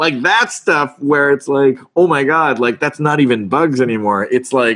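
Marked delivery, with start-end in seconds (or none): none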